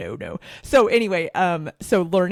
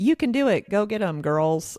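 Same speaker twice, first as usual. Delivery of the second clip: high, perky, chipper mock cheerleader voice. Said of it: "like, chipper".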